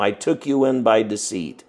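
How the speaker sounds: ordinary delivery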